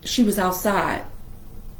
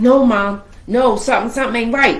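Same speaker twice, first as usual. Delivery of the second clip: ordinary talk, nothing marked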